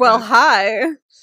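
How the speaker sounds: put-on flirty tone. Retelling how a character greets another character: imitating a flirty greeting. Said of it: "Immediately flirty".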